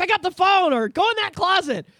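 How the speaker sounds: very high, loud shouting. Retelling what they yelled while watching her play, retelling own past yelling. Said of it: "I was yelling like".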